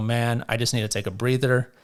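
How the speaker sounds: normal talking voice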